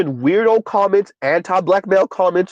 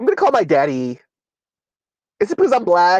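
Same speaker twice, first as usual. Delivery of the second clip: irate, swooping, fake valley girl voice. Retelling an arrested woman's words in her fake Valley Girl voice. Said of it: "even with her fake Valley Girl voice".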